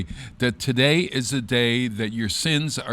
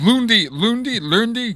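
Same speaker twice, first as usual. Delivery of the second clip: mock Scandinavian-accented chef voice; 10 semitones higher, 5 dB louder than usual. Repeating a French word for laughs: Swedish Chef voice. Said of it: "Oh, the Swedish chef".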